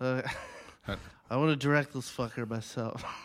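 mumbling movie-star impression. Retelling what he said, asked for in a Marlon Brando voice. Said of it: "I need it in a Brando voice, please".

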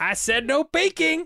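very high, very slow, stretched-out voice. Quoting a film line while praising the actor: imitating Daniel Craig in Logan Lucky. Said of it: "you watch, like, Logan Lucky and he's like".

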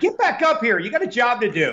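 very high, swooping yell. Acting out yelling at a coworker during a race, retelling a yell. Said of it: "got to yell at her".

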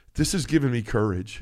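ordinary talk

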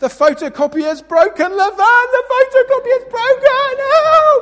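mock very high, very loud, drawn-out despairing wail. Pretending to act like a child at work: mock despair. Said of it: "roll around on the floor in despair".

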